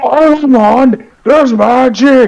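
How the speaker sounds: very high, genuinely thrilled excited shout. Showing how they would get someone's attention, yelling it. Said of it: "I would straight up just yell it".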